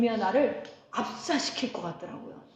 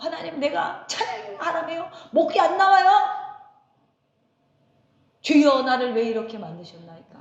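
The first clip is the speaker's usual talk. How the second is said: acted, loud, high, griping complaining tone; 5 semitones higher, 7 dB louder than usual. Retelling a hoarse-voiced complaint to god during prayer: imitating own past complaining prayer. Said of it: "목소리도 안 나오는데 막 불평이 나오는 거예요".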